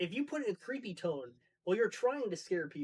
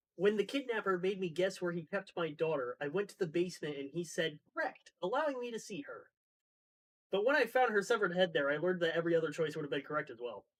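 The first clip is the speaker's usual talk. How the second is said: normal talking voice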